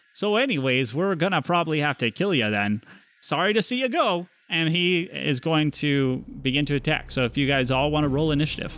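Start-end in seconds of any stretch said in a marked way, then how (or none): 0.2-4.3 put-on thorough fantasy Great Forest accent. A game master voices a character to the players in a Great Forest accent. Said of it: "It's a Great Forest accent through and through".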